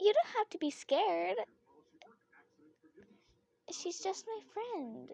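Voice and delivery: cutesy, cute, high kawaii voice. Practicing voice acting, trying the line again in a cute kawaii voice. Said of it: "Sound kawaii or something".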